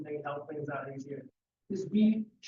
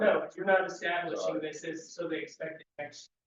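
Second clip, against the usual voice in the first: normal talking voice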